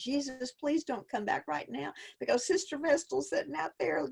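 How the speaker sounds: put-on crying, pleading voice. Retelling praying on a bathroom floor as a child: retelling own sobbing prayer. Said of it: "literally sobbing, crying, saying".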